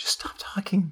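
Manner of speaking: quiet whispered pleading.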